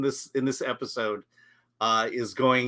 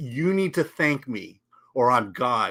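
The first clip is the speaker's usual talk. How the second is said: mock nasty, mean, aggressive, hard-pressing tone. Retelling a scene where one character threatens another: imitating Talos's mean voice. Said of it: "Talos basically stares him down with a mean voice".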